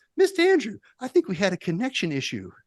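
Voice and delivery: put-on booming, high, swooping, sing-song kid voice. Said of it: "Saying it like Adam Sandler is what I imagine".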